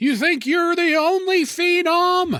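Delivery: shrill, high-pitched yelling. Retelling a favorite wrestling moment: imitating Paul Bearer yelling. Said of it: "Paul Bearer was yelling".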